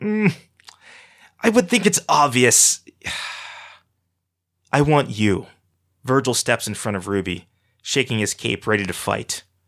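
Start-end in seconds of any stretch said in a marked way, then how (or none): 0.0-5.5 high, slow, scornful scoff. Narrator reads a character answering an impatient question, scoffing. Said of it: "Archie scoffs".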